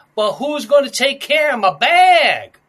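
put-on Adirondack accent, very loud, "bag" drawn out. Retelling what a woman said during an arrest: Adirondack accent. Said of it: "like, an Adirondack accent".

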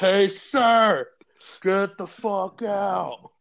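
very slow, loud, stretched-out, drawn-out yell. Acting out the line after another speaker suggests shouting: acted shouting. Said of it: "just start shouting at him".

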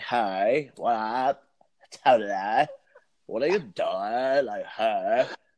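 imitated Valley girl voice. Describing a comedian's character bit, the speaker does a Valley girl voice. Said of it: "So she's a Valley girl".

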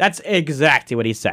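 plain

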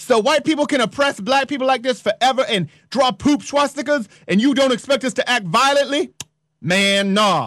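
imitated American vernacular dialect.

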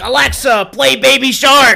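domineering, bossy, loud, drawn-out delivery. Retelling how Hazel orders the speaker around: imitating Hazel bossing Alexa. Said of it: "treats it like a slave".

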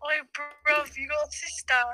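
put-on British voice. Contrasting Canadians with British people, imitating British people. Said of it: "We're like".

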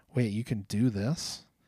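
plain

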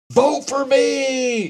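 mock shout, very high, long drawn-out me. Retelling a student campaign speech to an audience, retelling a shout. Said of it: "and just shouted".

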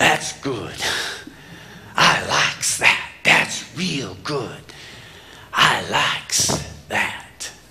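really rough, gruff street drifter voice. The speaker retells a homeless man's words on seeing an elderly couple: really gruff voice. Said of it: "says in this really gruff voice".

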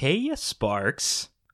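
taunting, teasing, mocking call-out. Lorene calls out to Flint from the dark in a mocking voice. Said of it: "a familiar mocking voice calls out".

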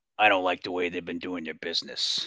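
put-on low, gravelly villain voice. Quoting a movie bad guy after describing his voice: raspy voice of John Davis Chandler. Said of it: "that is a real deep, raspy voice you got there".

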